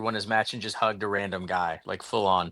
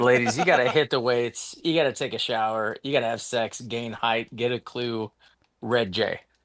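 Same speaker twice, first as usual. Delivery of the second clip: ordinary talk, nothing marked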